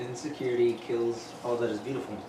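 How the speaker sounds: normal talking voice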